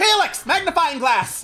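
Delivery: high, commanding yell. Narrating a scene, she presses a button on the desk and yells. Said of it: "and yells".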